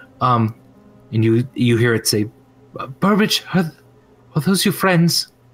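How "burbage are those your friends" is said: small, tiny voice, much higher, faster. Narrating a scene, the storyteller voices an unseen speaker in a small voice. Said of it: "you hear now a small voice".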